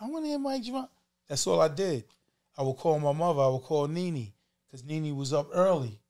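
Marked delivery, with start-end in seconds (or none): 0.0-0.9 put-on female voice, pitched up. Recalling calling in with a different voice, in a fake female voice. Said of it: "Female voice".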